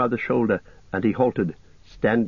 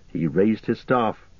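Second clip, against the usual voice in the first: ordinary delivery, nothing marked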